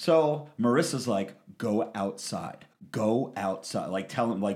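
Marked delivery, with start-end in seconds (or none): 1.6-3.9 slow, hushed half-whisper, words barely breathed, nearly mouthed. Retelling how a friend urged leaving quietly: retelling a half-whisper. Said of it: "whispering to me, like, mouthing".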